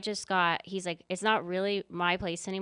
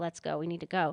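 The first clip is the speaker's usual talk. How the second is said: put-on whisper. Retelling urging the boyfriend to leave: imitating a whisper. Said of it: "And I whispered to him".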